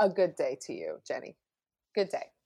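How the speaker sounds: put-on old-fashioned Victorian politeness, soft and swooping. Saying goodbye at the end of a chat, in a mock Victorian manner. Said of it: "I was trying to be Victorian".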